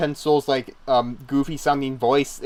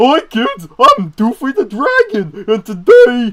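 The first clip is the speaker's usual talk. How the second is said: put-on loud, swooping, bouncy, high kids'-show host voice; 9 semitones higher, 9 dB louder than usual. Describing a cartoon segment's host and imitating him, in a Doofy the Dragon voice. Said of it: "Doofy had this voice where it was just like".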